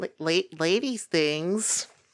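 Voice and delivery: high, stumbling character voice. Trying out a higher Queenie voice for a quote: high Queenie voice. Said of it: "I need to go higher for the Queenie voice".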